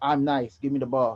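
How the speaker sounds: ordinary talk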